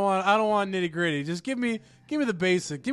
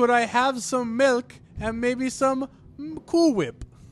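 overdone, over-the-top Canadian accent; 3 semitones higher than usual. Mocking a movie's characters, doing an over-the-top Canadian accent. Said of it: "their Canadian accents are, like, way over the top".

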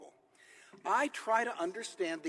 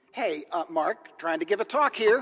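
very loud, firm voice with rising pitch; 8 dB louder than usual. Retelling how they warned a whispering student: retelling saying it more firmly. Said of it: "I said a little more firmly".

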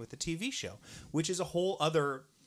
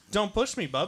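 put-on loud, crotchety, cranky old-man voice, pitched up; 5 semitones higher, 6 dB louder than usual. Joking after being told they sound like an old man: mock crotchety old man. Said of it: "and I'm crotchety".

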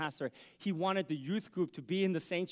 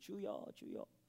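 much quieter, hushed, soft voice; 3 semitones higher, 11 dB quieter than usual. Retelling how a woman began her prayers at the pulpit, very quiet, soft voice. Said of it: "start off with a very quiet, soft voice".

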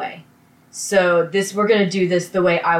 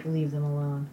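put-on low energy, listless, lower and quieter; 5 semitones lower, 11 dB quieter than usual. Discussing a character who doesn't care about people, quoting his line, imitating a low-energy delivery. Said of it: "I am mustering up the energy to say this".

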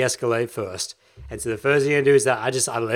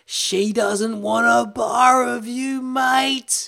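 put-on Queensland accent; 11 semitones higher than usual. Retell the voice that came into your ear during a bear hug, in a very Queensland Australian accent. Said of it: "In the most Queenslandian Australian accent".

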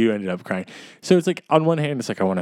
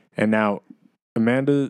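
plain

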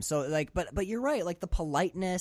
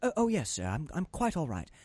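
light, soft, gentle put-on British accent; 3 dB quieter than usual. Retelling how an actor delivered a line about the ladder, in a soft British accent. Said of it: "adding that soft British touch to it".

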